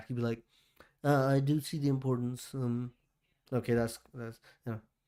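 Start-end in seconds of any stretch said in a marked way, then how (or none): 1.0-2.5 horribly done put-on matter-of-fact voice. Imitating the president's matter-of-fact answer: horrible Trump impression. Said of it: "my impressions are horrible".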